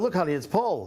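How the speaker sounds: ordinary talk, nothing marked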